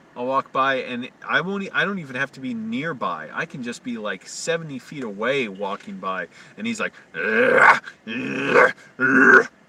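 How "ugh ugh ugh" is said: loud, dog-like grunting. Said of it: "He acts like a dog".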